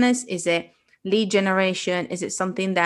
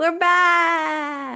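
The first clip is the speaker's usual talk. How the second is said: very high attempted shout, back stretched out; 10 semitones higher than usual. Opening the podcast episode with a greeting: trying to shout. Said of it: "I was trying to shout".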